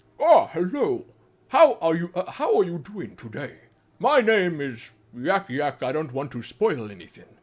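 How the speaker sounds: deep, low-register fantasy creature voice. Showing the voice done for Tauren in a WoW video series: Tauren voice. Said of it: "doing the Tauren voices".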